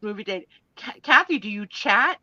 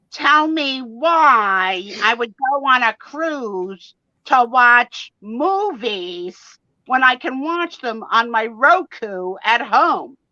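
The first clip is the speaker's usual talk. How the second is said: snide, snarky, sarcastic put-on voice, drawn-out "why"; 4 semitones higher, 4 dB louder than usual. Quote back to the other person what they said to you, imitating their snarky voice. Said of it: "and I quote in your snarky voice".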